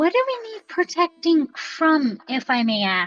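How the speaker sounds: gentle, mild-toned delivery. Speaking in character after being promised safety in the city, really soft voice. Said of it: "I'm gonna say in a really soft voice".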